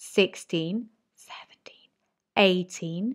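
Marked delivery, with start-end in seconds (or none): 1.2-1.9 soft whisper. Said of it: "whisper the ones, the odd numbers".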